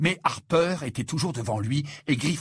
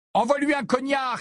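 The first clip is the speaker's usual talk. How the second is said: very high-pitched, shrill shout; 10 semitones higher than usual. Harry, passing near Coate, calls out to him, shouting. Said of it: "cria Harry".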